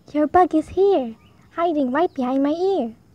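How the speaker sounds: usual speaking voice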